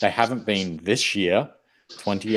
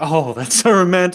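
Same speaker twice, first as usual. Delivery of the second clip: put-on sarcastic tone, higher and louder; 9 semitones higher, 9 dB louder than usual. Recounting a favorite scene, quoting her reply to his wish to marry, imitating a sarcastic tone. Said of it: "like sarcastically".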